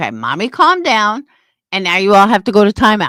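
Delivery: plain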